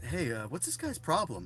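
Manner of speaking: ordinary talk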